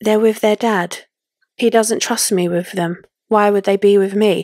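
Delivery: put-on eerily calm reply tone. Retelling a daughter's blunt reply to her father: imitating an eerily calm reply. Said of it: "eerily calm and just strange".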